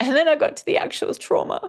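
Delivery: voice breaking near tears.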